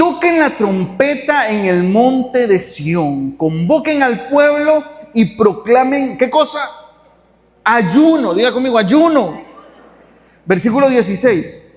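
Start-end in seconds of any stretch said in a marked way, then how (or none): 0.0-6.2 forceful, strong man's voice with powerful force. Reading a scripture verse aloud to the congregation: reading with force, in a strong voice. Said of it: "con fuerza, con voz de hombre".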